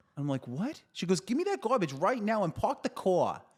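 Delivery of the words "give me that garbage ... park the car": put-on Long Island accent, r dropped from "car". Quoting what your daughter says to you, her dad, imitating your daughter's Long Island accent. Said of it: "my daughter talks with a Long Island accent".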